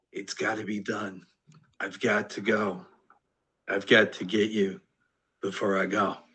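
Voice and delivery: half-whispered, hushed monster voice. Voicing a flying creature as it comes at the party: creature half-whispering. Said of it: "you can hear it whispering".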